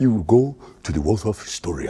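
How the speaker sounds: put-on heavy-breathing voice. Speaker imitating James Earl Jones for the others, with put-on heavy breathing. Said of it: "Why are you breathing so heavy?".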